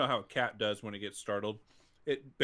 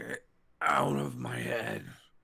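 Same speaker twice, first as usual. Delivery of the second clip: growling, rough, rasping, creaky tone. Voicing a resisting mind heard through a mental link, growling tone. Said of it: "in kind of a growling tone of".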